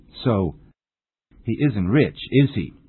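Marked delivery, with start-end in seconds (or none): 1.4-2.7 "is he" lifting in pitch at the end. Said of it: "you should use a rising intonation".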